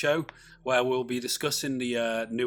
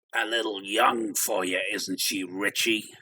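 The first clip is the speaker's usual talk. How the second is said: deep, sinister clown voice; 4 semitones lower than usual. Asked for your best impersonation of a character's line, answer in a Pennywise voice. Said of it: "Pennywise from It".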